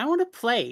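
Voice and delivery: high, whiny, whining little puppy voice. Voicing a dog who whines and begs to play: whiny dog voice. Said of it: "does a little whine".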